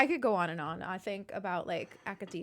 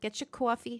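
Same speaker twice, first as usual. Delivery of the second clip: put-on speaker's own New York accent; 3 semitones higher than usual. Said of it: "I just said coffee like such a New Yorker".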